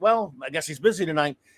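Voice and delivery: ordinary talk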